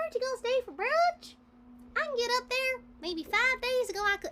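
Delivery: high-pitched, nasal cartoon character voice. Signing an item after being asked to use the voice: slightly off Apple Bloom voice. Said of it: "my slightly off apple bloom voice".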